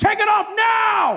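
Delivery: acted-out male yelling, slow, high and shouted. Recounting being told to undress, the speaker is imitating a man shouting at him. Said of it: "this man shouting at you".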